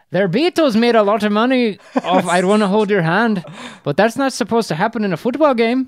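put-on Irish commentator accent, very high and loud. After a first try that was not very good, you quote a football announcer, irish announcer impression. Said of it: "an Irish announcer".

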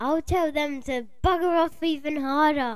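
put-on tiny, very high child voice, yelling.

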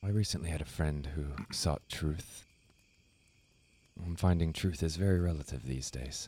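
speaking in a whisper. Speaking to a listener mid-conversation, whispering. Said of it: "Why are you whispering now".

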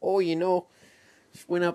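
loud, laid-on Minnesota accent. Joking about accents, the speaker tries a line in a Minnesotan accent. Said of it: "That's Minnesotan".

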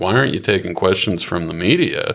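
plain

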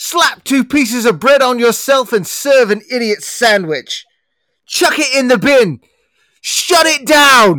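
loud, high-pitched berating delivery. Acting a sketch scolding a cook: Gordon Ramsay impression. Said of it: "The best Gordon Ramsay impression anyone has ever done".

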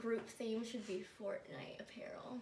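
soft, voiceless, joking whisper.

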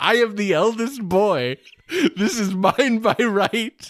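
mock very high, slow, drawn-out screaming. Retelling a scene where Kendall screams: imitating Kendall screaming. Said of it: "to screaming".

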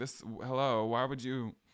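put-on, very annoyed tone. Retelling reaction to the policeman's visit: imitating own annoyance. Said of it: "I was very annoyed".

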